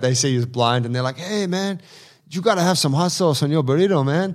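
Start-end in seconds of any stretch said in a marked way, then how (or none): 1.2-4.4 high-pitched put-on LA homeboy voice. Retelling a movie scene at a taco stand, imitating LA homeboys. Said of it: "a L A sort of homeboys there".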